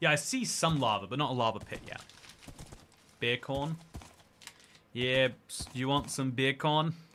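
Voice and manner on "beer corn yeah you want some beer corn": best-effort put-on Jamaican accent. Doing a bit from a school meme while playing a game, jamaican accent. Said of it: "This is my best Jamaican accent".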